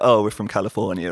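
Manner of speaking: usual speaking voice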